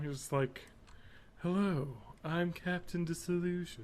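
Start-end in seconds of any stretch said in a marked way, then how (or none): 1.4-3.8 put-on quiet ASMR voice, higher. Show someone reading his Wikipedia page how he introduces himself, in a very quiet Captain Disillusion ASMR voice. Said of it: "it's very quiet, ASMR trigger voice".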